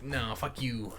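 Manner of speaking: soft, muttered merchant voice. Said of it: "the merchant is like".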